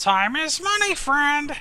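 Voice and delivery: very high, loud, bad gnome impression. Right after calling it a horrible gnome impersonation, the speaker speaks in that gnome voice. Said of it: "It's my horrible gnome impersonation".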